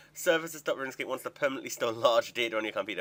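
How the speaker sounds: ordinary delivery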